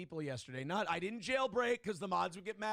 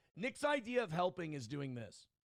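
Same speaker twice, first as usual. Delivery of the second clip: normal talking voice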